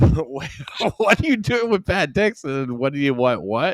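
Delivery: acted furious, really mad, raging outburst. Speaker recounts a man's reaction to a screenshot: imitating him being really mad. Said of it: "He's like really mad".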